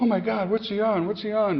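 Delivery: frantic, very high, panicked scream. Retelling a mother's reaction on seeing her son come home: imitating a screaming panicked mother. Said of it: "she just started screaming, having a panic attack".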